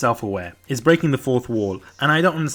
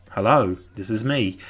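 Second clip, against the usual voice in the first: put-on boring monotone teacher voice, lower; 4 semitones lower than usual. Imitating a physics teacher who sounds really boring: imitating Mister Quasar's boring voice. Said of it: "but he sounds really, really boring".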